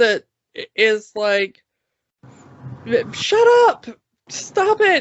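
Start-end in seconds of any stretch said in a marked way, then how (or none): 3.1-5.0 put-on yelling, higher. Retelling a film scene where one character snaps at others: imitating someone yelling. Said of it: "why are you yelling at us?".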